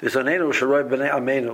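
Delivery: ordinary delivery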